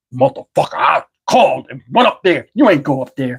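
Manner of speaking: demonic devil voice. Retelling an argument about whether he was at the Christmas party, devil voice. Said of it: "like he had this devil voice".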